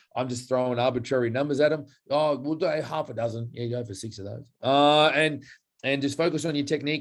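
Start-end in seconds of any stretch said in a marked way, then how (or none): 2.1-4.4 put-on flippant offhand tone. Retelling what is said to clients about rep numbers: imitating own flippant tone. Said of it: "I say it in such a flippant way".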